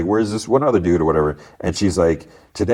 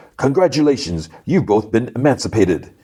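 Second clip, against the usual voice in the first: acted, half-hearted yell at normal talking volume; 4 semitones higher than usual. Retelling a scene where a robber picks hostages: retelling a character's yell. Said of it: "he yells".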